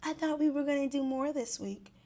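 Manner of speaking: put-on whisper. Retelling a sidebar conversation during a group talk: imitating a whisper. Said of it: "she's whispering to Jeremiah".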